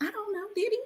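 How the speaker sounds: high, very soft, hushed, barely audible half-whisper. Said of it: "Why are we whispering?".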